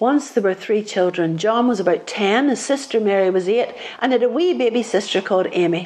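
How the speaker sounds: ordinary delivery, nothing marked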